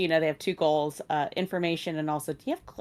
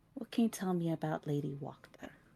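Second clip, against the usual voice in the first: soft voice, kept slightly lowered; 9 dB quieter than usual. Player character leans forward to ask about Lady Wachter; lowered voice. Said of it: "keep their voice a little down".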